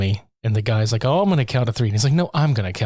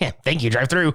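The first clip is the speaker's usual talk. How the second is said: put-on cartoon teenager voice, higher; 3 semitones higher than usual. Picturing a movie character turning into Beavis: Beavis voice. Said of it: "turning straight up into Beavis, like".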